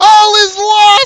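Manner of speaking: very loud, very high, shrill scream. Game master voicing a character who then bolts, screaming at the top of his lungs. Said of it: "He screams at the top of his lungs".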